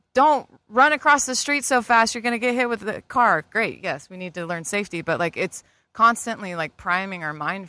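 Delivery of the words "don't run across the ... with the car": shrill, loud yelling. Speaker recalls a mom shouting warnings at her kid; imitating a mom yelling. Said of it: "your mom's probably yelling at you like".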